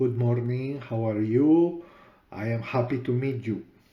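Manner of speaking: put-on thick, heavy Latin American accent. Retelling how he used to speak english: imitating his former heavy latin accent. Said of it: "I had a little bit of a heavy accent, a Latin accent, so I would say".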